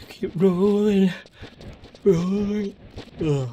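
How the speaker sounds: very high, drawn-out speech, yawning through words. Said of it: "why I'm yawning".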